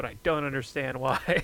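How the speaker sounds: normal talking voice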